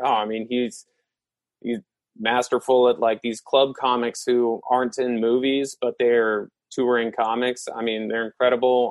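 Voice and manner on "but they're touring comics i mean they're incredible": ordinary talk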